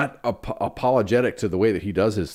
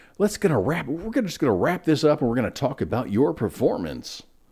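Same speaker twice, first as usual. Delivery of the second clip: cheesy, crappy put-on radio DJ announcer voice; 4 semitones higher than usual. Describing the end-of-year performance review wrap-up: cheesy radio-announcer voice. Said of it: "I say that in a crappy radio voice".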